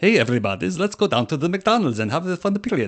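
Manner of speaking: weird put-on Ukrainian accent. Told they said a word in a weird accent, the speaker shows their put-on Ukrainian accent. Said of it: "that's my Ukrainian voice".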